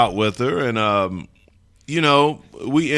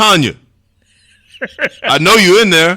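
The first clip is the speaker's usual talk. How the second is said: very loud, high-pitched shouting; 8 semitones higher, 9 dB louder than usual. Retelling a first date when a man knocked at the door: imitating a man yelling. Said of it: "So he's yelling".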